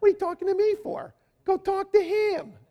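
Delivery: very high-pitched cartoon rabbit voice. Acting out what Josh would say, redone in a Bugs Bunny accent. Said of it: "With a Bugs Bunny accent".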